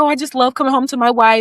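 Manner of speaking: put-on excited voice. Retelling how Naheem acted after coming home: imitating excited Naheem. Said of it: "he was so excited".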